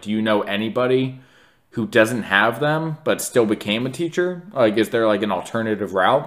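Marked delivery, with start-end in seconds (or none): none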